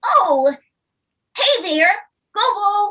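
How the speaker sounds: bouncy, very high and loud voice. Describing the voice actor's take on Red, speaker demos a bouncy Red voice. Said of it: "she kind of has this bounce to her voice".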